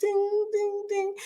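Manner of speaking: imitated high, soft ding ding ding chime.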